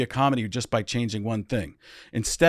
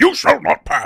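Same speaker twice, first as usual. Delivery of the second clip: very high, loud, raised declaring tone; 7 dB louder than usual. Doing an impression when called on, Ian McKellen voice. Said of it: "Ian McKellen".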